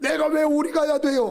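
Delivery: high, loud, indignant arguing back.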